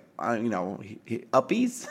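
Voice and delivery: put-on voice of a three-year-old toddler. A parent comparing a seven-year-old with a younger child, imitating a three-year-old. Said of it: "a 3-year-old that's like".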